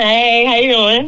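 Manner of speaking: high, slow, nervous voice. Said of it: "Why you sound nervous?".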